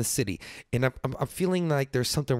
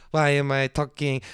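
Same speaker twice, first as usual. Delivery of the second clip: normal talking voice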